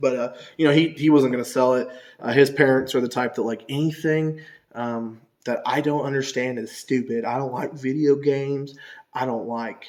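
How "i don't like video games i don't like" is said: put-on American Southern accent. Imitating a kid's parents who dislike games: Southern accent imitating the parents. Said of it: "I'm giving, like, a Southern accent".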